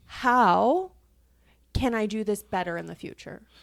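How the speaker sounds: mock pleading, begging tone with "how" stretched long. Retelling what was said in a disagreement: imitating own pleading tone.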